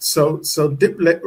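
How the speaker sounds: normal talking voice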